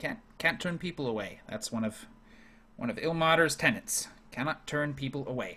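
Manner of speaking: tired, put-upon, exasperated, weary grumble. Voicing a weary official rubbing his temples, exasperated NPC muttering. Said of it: "rubbing his temples".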